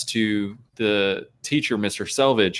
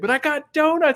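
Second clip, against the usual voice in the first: mock shrill yell, very high-pitched and carrying far. Retelling calling down a long hallway to a teacher: imitating own scream.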